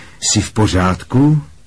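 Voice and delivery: plain reading voice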